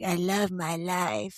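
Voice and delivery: put-on slow puppet voice with a light French accent. Retelling how she voiced her hand puppet, with a little french accent. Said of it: "she would do a little French accent for him".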